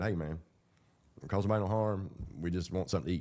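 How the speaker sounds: normal talking voice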